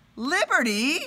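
high-pitched, loud yell. Finding a horse in the bathroom, the narrator calls to it, shouting. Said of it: "I shouted".

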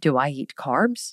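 put-on, low, slow, drawn-out, disbelieving tone. Retelling own reply when asked about eating carbs, acting incredulous. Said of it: "I looked at her like incredulously".

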